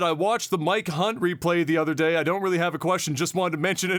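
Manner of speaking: ordinary delivery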